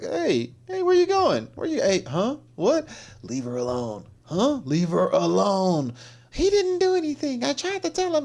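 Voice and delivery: high, swooping voice swinging all over the range. Narrating a video and acting out what Joe says: voicing Joe Biden. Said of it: "Joe looks up like".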